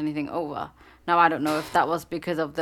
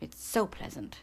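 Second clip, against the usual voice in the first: sarcastic, dry, breathy whisper; 3 semitones higher, 9 dB quieter than usual. Speaker describing bright lights at an eye exam, sarcastic.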